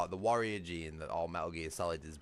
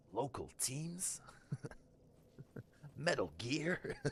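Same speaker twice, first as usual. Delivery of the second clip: bad soldier growl, reaching for grit, soft and high; 8 semitones higher, 6 dB quieter than usual. Speaker says his voice lacks grit, then tries a Solid Snake impression again. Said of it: "I've not got enough grit in my voice".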